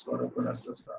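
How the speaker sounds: voiceless sick whisper.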